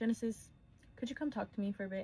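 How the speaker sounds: grave, very serious, no-nonsense tone. Retelling the manager calling the speaker aside at work, imitating a very serious tone. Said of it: "in a very serious tone".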